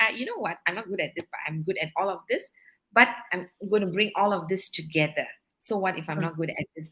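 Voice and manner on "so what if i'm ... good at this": ordinary talk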